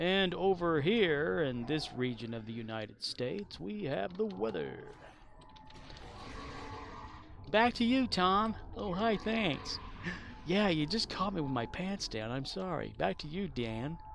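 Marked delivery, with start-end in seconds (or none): 0.0-8.6 Oregon accent, local TV weatherman delivery. Answering a remark about the Oregon accent, speaker does an Oregon weatherman accent. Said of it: "Oregon accent is like guy telling you the weather".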